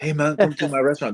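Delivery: put-on half Jamaican, half Spanish accent, very high. Recalling a pushy restaurant guy inviting him in, half Jamaican, half Spanish accent. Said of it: "they talk like half Jamaican, half Spanish".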